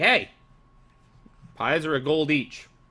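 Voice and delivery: curt sharp snap. Voicing an NPC who snaps around at a player: snapping sharply. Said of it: "one of them kinda snaps around and is like".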